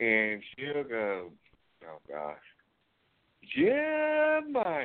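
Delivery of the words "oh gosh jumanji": put-on old-lady voice, country accent, much higher pitch. Describing an 85-year-old woman who sounds country, speaker quotes her: imitating Jen's country accent. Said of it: "Jen's got a country accent on her".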